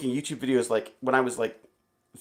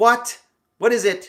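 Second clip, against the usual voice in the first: completely snarky, raised and drawn out; 8 semitones higher, 6 dB louder than usual. Imagining voicing Amazon's Alexa when someone says hello, snarky Alexa voice. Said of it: "like completely snarky voice for Alexa".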